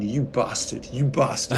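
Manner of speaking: plain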